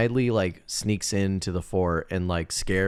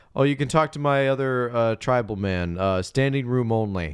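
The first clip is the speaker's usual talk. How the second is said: ordinary delivery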